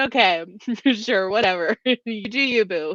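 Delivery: sassy, dismissive whatever tone. Imitating a film character's dismissive reply: imitating someone being sassy. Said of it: "when he's just being sassy and like".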